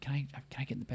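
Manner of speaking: soft, hushed little whisper. Retelling a child's question in a shared hotel room: imitating a whisper. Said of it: "she was, like, whispering".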